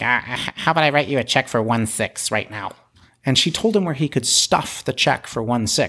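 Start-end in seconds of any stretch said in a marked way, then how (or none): 0.0-2.7 put-on nasal man's voice. Retelling how a man offered to write a check, imitating his nasally voice. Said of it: "he has like a nasally voice".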